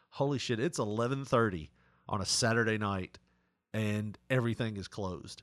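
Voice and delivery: plain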